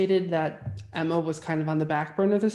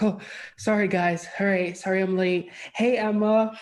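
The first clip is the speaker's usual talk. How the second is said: put-on breathless teacher voice. Retelling a teacher running in late on the first day: imitating Mister Simpson out of breath. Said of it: "comes running in and is, like, out of breath".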